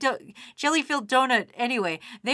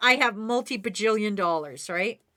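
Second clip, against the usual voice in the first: ordinary talk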